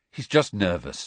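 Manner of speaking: ordinary delivery, nothing marked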